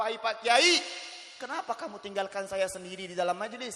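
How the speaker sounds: ordinary talk, nothing marked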